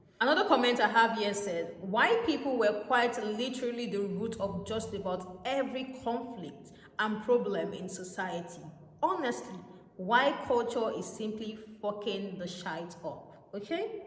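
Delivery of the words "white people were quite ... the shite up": ordinary delivery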